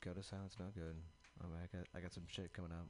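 mumbled, indistinct speech. Saying a made-up word before being asked to repeat it; mumbling. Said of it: "I think you're mumbling".

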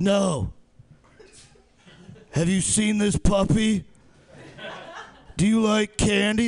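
same weird, one-note tone held all through. Mocking a comic's delivery the crowd laughed at: Chris Canaster's weird tone. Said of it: "That's the only tone he ever has".

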